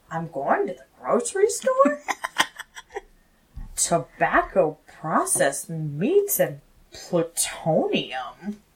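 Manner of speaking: upspeak, every sentence rising in pitch. Describing a man whose every sentence sounds like a question, imitating upspeak. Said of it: "every single sentence sounds like a question".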